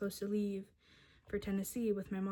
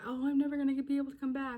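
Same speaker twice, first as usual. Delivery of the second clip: mock high, loud sobbing through tears; 6 semitones higher, 5 dB louder than usual. Recalling herself at thirteen on the phone after getting in trouble: retelling her own sobbing. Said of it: "I'm like sobbing on the phone".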